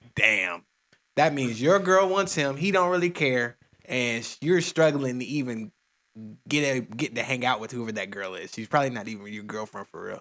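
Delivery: ordinary talk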